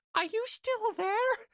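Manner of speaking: very high, squeaky creature grunt voice.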